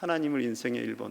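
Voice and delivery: soft, quick echo.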